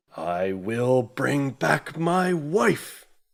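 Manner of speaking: shouting. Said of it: "a voice from the interior basically just yells out".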